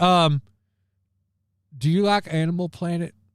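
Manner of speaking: put-on stuttering, stammering voice. Recalling a clip while trying to remember a name: stuttering Jake Hudson imitation. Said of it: "that stuttering, stammering mess".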